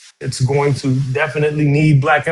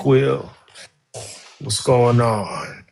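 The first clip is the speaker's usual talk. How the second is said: sexy talking voice, pitched lower; 4 semitones lower than usual. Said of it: "what you got your [name] voice?".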